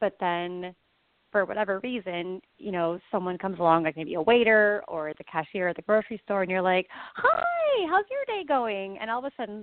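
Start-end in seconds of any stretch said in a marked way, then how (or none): 7.1-9.0 very high, drawn-out, swooping put-on polite voice. Acting out greeting a cashier, imitating a voice raised an octave. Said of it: "your voice raises, like, an octave".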